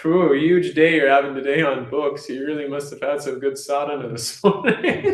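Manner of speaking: laughing, sarcastic, friendly teasing tone.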